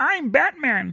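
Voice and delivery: very high, puppet-style superhero voice. Arguing over who should be Batman, the speaker offers a Muppet Batman voice. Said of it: "That was my uh, Muppet Batman".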